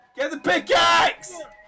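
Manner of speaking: screaming, yelling. Urging others during a game to get the pickaxe: screaming. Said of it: "stop fucking screaming at me".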